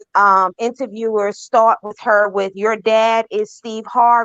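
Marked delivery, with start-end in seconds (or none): none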